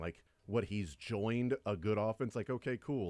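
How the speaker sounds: usual speaking voice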